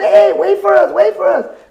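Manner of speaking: put-on high holler. Retelling calling after a rider who left them: retelling a yell. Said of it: "I'm yelling for him".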